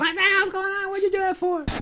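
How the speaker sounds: put-on shrill, very high-pitched screaming outburst. Retelling what the choir director said, imitating someone screaming. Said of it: "came screaming".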